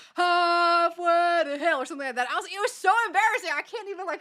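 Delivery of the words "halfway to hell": mock abrupt outburst, shouted, loud and high. Retelling how a guy in a horror house line acted: imitating someone yelling. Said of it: "he just starts yelling".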